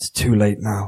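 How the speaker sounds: muttering under breath. Voicing a character just before he casts a spell: muttering quietly under his breath. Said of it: "mutter quietly under his breath".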